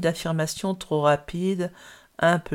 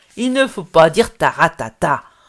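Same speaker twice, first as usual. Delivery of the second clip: fiery, very loud angry outburst; 11 dB louder than usual. Old Sacha answers old Raïssa's 'taratata', flaring up angrily. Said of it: "s'emporta le vieux Sacha".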